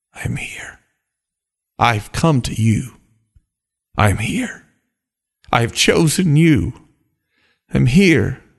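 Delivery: speaking in a whisper. Voicing God coming close to people at Christmas: whispering. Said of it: "He came whispering".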